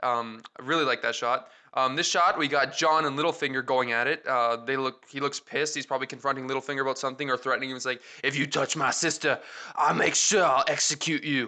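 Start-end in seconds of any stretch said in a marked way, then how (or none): 8.2-11.5 bad put-on English accent, shifted voice. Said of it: "Sorry, my accent's terrible".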